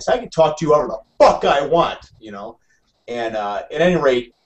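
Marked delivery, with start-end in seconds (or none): 0.1-2.0 put-on heated, angry yell, pitched up. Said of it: "and I'm yelling".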